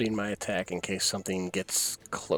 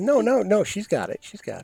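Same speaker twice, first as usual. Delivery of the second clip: very high, slow, sing-song, mock-confident sarcastic voice; 12 semitones higher, 7 dB louder than usual. Assuring the group that she will open the door: sarcastic. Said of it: "I could feel the sarcasm dripping off of your voice".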